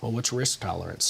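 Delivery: ordinary delivery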